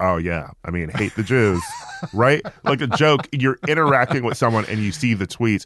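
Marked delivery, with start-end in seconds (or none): 0.0-2.4 mock bone-dry, dead straight delivery, no wink. Showing how you'd say a joking line to someone online, deadpan. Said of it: "like deadpan you would be like".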